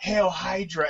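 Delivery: imitated whisper. Quoting own line from a track: imitating a whisper. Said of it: "I whisper in your ear".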